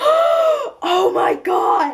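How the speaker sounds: mock freak-out, very high, long stretched "oh". Retelling reading a plot twist in the car, retelling freaking out. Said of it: "I freaked out so much".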